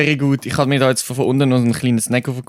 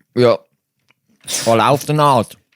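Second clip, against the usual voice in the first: speaking with a full mouth; 3 dB louder than usual. Chatting with another speaker about snacks, talking with a full mouth. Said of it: "mit vollem Mund".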